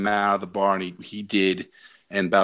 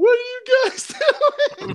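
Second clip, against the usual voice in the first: put-on crying, higher. Retelling a fight, imitating a cousin who stood there crying. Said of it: "He's just there crying, going".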